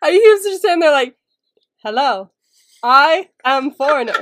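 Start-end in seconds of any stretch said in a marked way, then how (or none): 1.8-4.2 slow, stiff, mechanical robot voice. Describing a man sitting still before the camera, imitating him: robot-like voice. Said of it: "he was like a robot".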